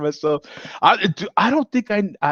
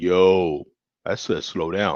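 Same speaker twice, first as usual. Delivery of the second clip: very low, heavy, deep, drawn-out bass voice; 9 semitones lower than usual. Acting out a warning, deep voice. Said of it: "This one's got like a deep voice".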